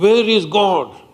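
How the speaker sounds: grand, preacherly, big and high-pitched delivery. Telling a story, the priest questioning the little boy, booming voice. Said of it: "with a booming voice he asked".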